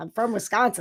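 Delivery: normal talking voice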